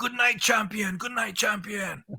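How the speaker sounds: mock chorus of high, hollered shouts. Speaker recounts the prisoners calling back to him at night, retelling prisoners' scream. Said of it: "they would all scream back".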